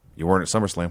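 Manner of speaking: put-on mutter under breath. Retelling a wrestler's quiet reply, imitating a mutter under the breath. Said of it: "under his breath".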